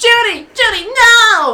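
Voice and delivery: very high, very loud shriek. Retelling a movie scene where the character sees Judy drowning: Fred impression. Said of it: "I hate how many times you're doing this impression".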